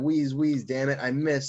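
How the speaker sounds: ordinary talk, nothing marked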